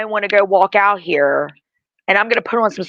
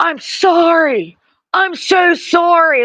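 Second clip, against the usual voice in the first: high, very slow yell with sorry stretched out; 9 semitones higher than usual. Recounting how a man yelled an apology at him, retelling a yelled apology. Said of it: "his man is yelling at me, telling me he's sorry".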